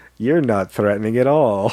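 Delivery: normal talking voice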